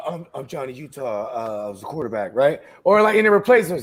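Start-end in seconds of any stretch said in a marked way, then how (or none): 0.1-2.6 very deep, flat monotone voice. Imitating an actor's flat delivery of his lines: Keanu Reeves monotone impression. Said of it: "'cause he'd be like this".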